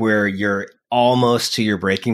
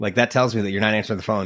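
ordinary delivery

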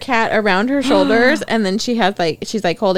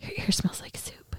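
soft, hushed whisper. Retelling a funny voiceover line from a video: imitating a whisper. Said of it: "he's whispering in his ear".

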